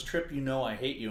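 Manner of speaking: ordinary talk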